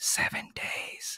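very quiet, breathy, barely voiced whisper. Recounting a movie scene where you hear a whisper: whispered. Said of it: "you're going to hear a whisper like".

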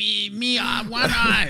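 very high, slow, drawn-out whiny voice. Imitating the card character's voice line: high-pitched whiny Dreg Dredges voice. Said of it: "he does that voice where he's like".

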